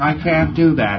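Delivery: listless, uncaring, slow and drawn-out put-on tone. Retelling a preclear's reply during a session, imitating an apathetic voice. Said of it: "he said in an apathetic voice".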